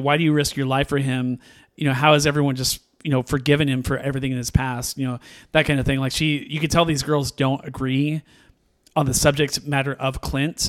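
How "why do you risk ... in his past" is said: plain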